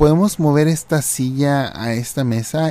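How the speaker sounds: ordinary delivery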